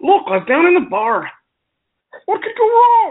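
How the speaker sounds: awful, very high, swooping Irish brogue. Opening a story about a bar in character: awful Irish accent. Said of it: "my awful Irish accent".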